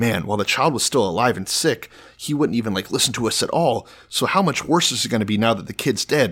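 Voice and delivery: normal talking voice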